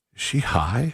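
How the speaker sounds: hushed whisper under the breath. Retelling a remark to a friend about the server: retelling a whisper. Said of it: "I whispered to my friend".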